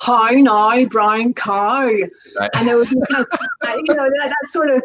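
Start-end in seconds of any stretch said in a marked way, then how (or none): 0.0-1.8 put-on Northern Irish accent, slower. Explaining accents, the speaker demonstrates a phrase in a Northern Irish accent. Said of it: "a Northern Irish accent would normally come across as".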